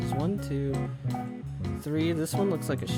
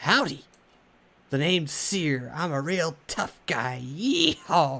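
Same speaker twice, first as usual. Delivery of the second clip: put-on cowboy voice, slower. Someone with a replica of Seer's head introduces himself as him: mock tough-cowboy Seer voice. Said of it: "I do not sound like that".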